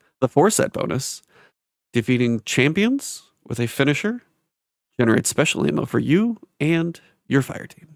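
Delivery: half-whispered throughout. Reading stat bonuses aloud after being asked to half-whisper them: half-whisper. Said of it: "Can you whisper the stat bonuses?".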